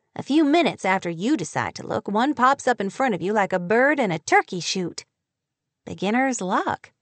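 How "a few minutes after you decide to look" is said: plain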